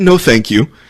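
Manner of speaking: courteous, mannerly, polite tone with Midwestern sound. Retelling saying no to a stranger's offer: imitating a polite Midwestern boy. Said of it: "like a polite Midwestern boy".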